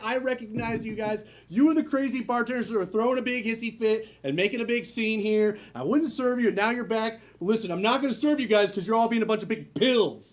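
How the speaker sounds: usual speaking voice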